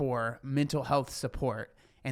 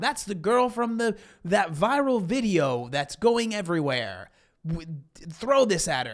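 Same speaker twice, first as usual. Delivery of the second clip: mock, high-pitched, yelled voice; 5 semitones higher, 4 dB louder than usual. Doubting a story, acting out what men shouted from a car: imitating men yelling. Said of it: "they yelled out of their car".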